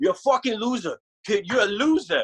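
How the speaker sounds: put-on movie-style Brooklyn accent. Retelling a fond memory, quoting a guitar player grabbing him, Brooklyn accent. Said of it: "Brooklyn accent's amazing".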